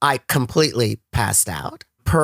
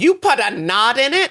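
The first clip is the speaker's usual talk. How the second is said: high, mock startled scream in disbelief; 8 semitones higher than usual. Retelling screaming backstage on learning the laces were knotted: imitating own scream. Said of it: "I screamed".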